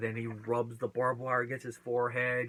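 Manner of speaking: ordinary talk, nothing marked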